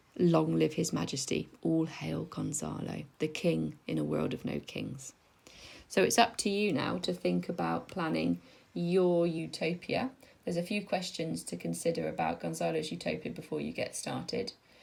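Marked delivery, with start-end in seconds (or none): none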